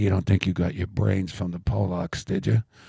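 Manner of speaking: imitated whisper. Retelling what the father said into the speaker's ear: imitating father's whisper. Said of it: "he'd whisper in my ear".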